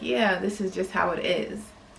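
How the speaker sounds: normal talking voice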